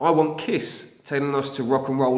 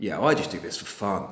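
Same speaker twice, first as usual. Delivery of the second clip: judgmental, smug, faintly sarcastic dismissive tone; 6 semitones lower, 3 dB quieter than usual. Imitating a band member who says they play for fun: imitating a judgmental, sarcastic, smug tone. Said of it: "in a somewhat judgmental, uh, slightly sarcastic and slightly smug tone".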